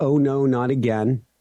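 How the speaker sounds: ordinary talk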